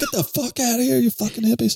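acted very high-pitched, shrill screaming fit. Describing a film scene, acting out a man with a pitcher screaming at intruders. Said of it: "in between screaming at them".

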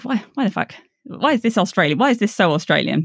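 normal talking voice

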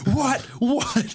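mock very high-pitched drunken heckling scream. Retelling being drunk, screaming in opponents' faces; retelling drunken screaming. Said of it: "drunkenly screaming".

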